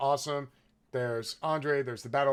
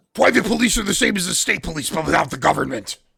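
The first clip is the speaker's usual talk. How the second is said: very loud, rough masked-hero voice; 5 semitones higher, 11 dB louder than usual.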